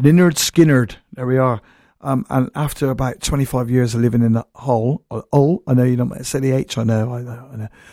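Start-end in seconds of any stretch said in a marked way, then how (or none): 0.0-0.9 Bristolian pronunciation. A speaker from Bristol says a band's name the way locals say it, Bristol accent. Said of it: "Or as we say in Bristol".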